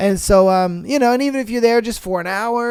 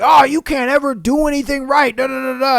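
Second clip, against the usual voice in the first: put-on irritated, angry scolding voice; 4 semitones higher than usual. Imagining a boss getting mad at an employee: imitating an angry boss. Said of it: "imagine his boss gets mad at him".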